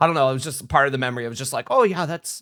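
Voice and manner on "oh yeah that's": put-on failed French accent, higher. Retelling what a doctor said about an X-ray: bad French accent imitation. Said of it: "I cannot do a French accent".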